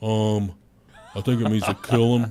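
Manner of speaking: put-on awkward man's voice. Showing others how he really sounds after saying an earlier try was wrong, imitating an awkward man. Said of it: "That's exactly how he sounds. That's a spot-on impression".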